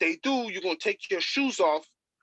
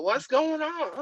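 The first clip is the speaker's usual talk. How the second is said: poor, fake, pitched-up Brazilian accent; 9 semitones higher than usual. Admitting a weak attempt, the speaker retells the moment in a bad Brazilian accent. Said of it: "I can't do a good my Brazilian accent and go".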